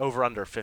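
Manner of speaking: normal talking voice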